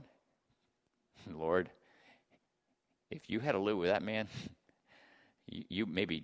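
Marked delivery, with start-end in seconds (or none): 1.3-6.2 low, soft, exasperated complaining tone. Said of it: "She's going".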